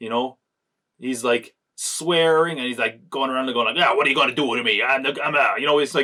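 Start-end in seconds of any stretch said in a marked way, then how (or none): 3.8-4.8 put-on fast, hammy, tough kid gangster voice, rattled off. Describing a man on screen who swears and struts around: childish gangster impression. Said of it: "like a child doing an impression of a gangster".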